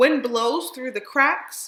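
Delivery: ordinary delivery, nothing marked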